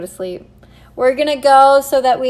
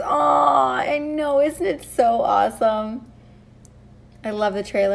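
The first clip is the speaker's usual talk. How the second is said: soft, tearful voice, close to tears, "I" drawn out; 5 dB quieter than usual. Reacting to their wedding trailer with viewers, tearful. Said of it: "I swear to God, I can't hold my tears".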